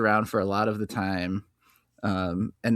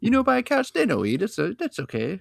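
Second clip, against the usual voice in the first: strong put-on Italian accent, thick and very high; 12 semitones higher than usual. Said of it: "he has an extremely strong Italian accent".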